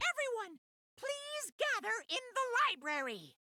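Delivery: high cartoon mouse voice. Voicing a figurine announcing that a body has been discovered, Mickey Mouse voice. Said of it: "Why you talk like Mickey Mouse?".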